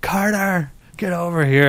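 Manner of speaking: mock mother voice, high, drawn-out scream. Retelling a young mom on the street: imitating a mom screaming. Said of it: "mom just starts screaming".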